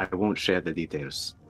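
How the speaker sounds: fast, hushed half-whisper. Leaning down to half-whisper in a character's ear after being kicked: half-whispering in character. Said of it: "just whisper in his ear really quick".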